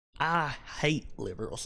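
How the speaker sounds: put-on Southern American accent. Speaker mentions liberals, then says a line in a southern American accent. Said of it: "I said that with my with my southern accent".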